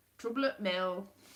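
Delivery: poor put-on Yorkshire accent. Trying out accents after a failed Lancashire one, bad Yorkshire accent. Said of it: "Can't do it".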